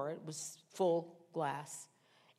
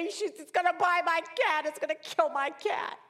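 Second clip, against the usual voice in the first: put-on scream, much higher and louder; 11 semitones higher, 7 dB louder than usual. Telling how her cat faced a snake, she re-enacts her own screaming. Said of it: "And then I'm screaming louder".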